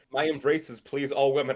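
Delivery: ordinary delivery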